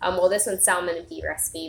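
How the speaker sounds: ordinary delivery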